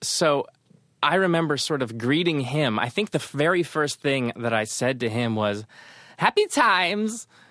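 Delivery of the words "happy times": very high-pitched put-on Kazakh accent. Retelling greeting the wedding host at the wedding: impersonating fake Kazakh journalist. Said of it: "he started to impersonate the fake journalist from Kazakhstan".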